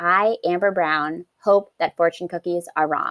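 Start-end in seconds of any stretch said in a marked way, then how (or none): none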